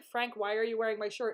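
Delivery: very polite, well-behaved, courteous manner of speaking. Retelling the same scene the way it really went: imitating Ian asking politely. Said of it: "he asks in a very polite way".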